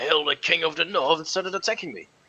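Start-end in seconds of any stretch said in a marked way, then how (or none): 0.0-1.2 loud, sudden, wild crazed yell. Telling how a man suddenly attacked him, retelling the man's sudden yell. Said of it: "suddenly he yelled".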